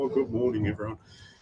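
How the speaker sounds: half-swallowed, unenthusiastic, soft low-energy mumble. Retelling how a sleepy room answers a greeting: imitating a mumbled quiet greeting. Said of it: "a bit of a mumbled, quiet".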